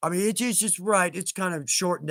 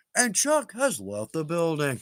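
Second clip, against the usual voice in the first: showy, swooping voice like a TV game show host. Speaker thanking everybody who joined the fan play, in a game show host voice. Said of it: "Game show host voice, right?".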